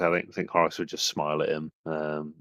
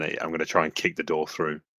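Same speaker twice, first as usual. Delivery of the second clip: ordinary talk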